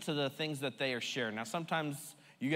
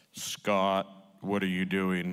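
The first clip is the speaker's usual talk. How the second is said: very deep, booming voice, spoken slowly; 7 semitones lower, 6 dB louder than usual. Showing what the voice inside does not sound like: Holy Spirit voice. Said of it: "I'm not saying it's gonna sound like this".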